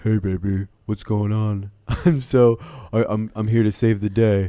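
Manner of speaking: flat, slow, level fuckboy drawl. Imitating a contestant comforting a sad Hannah: imitating Tyler C. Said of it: "I'm gonna use this voice".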